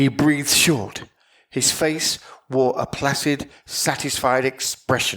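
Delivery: plain reading voice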